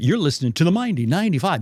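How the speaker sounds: on-air radio disc jockey announcer voice. A speaker who stuttered demonstrates the radio voice used as a college DJ. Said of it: "I could go into a radio voice".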